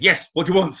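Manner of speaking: brusque, high and loud voice.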